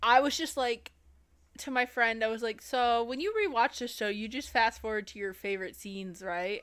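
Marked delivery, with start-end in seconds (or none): none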